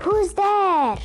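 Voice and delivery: stage whisper. Narrator reads people creeping into the garden to see who is there, loud whisper. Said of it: "whispered loudly".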